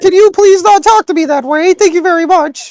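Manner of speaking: very high pitch. Retelling a confrontation, the speaker acts out their past self in a higher-pitched voice. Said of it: "bit at a higher pitch".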